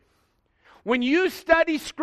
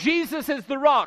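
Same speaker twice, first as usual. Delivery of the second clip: ordinary talk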